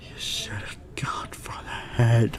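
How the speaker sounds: hushed, slow, soft whisper.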